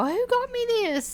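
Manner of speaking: very high-pitched, thrilled, excited tone. Retelling a movie scene where the mayor opens a candy box: imitating excited speech. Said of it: "And he's all excited".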